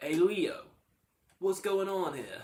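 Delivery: put-on heavy, loud, high-pitched New York accent.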